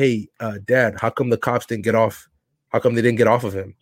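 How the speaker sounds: ordinary talk, nothing marked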